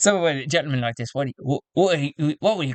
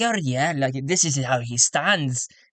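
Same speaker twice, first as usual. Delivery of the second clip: put-on accent, part Scottish, part Irish. Voicing a new councilman character: a bit Scottish, a bit Irish accent. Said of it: "he talks like this".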